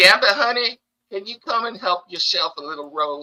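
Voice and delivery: put-on Southern accent. Playing Rogue and calling another player over: Rogue's Southern accent. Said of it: "That's why I have a Southern accent".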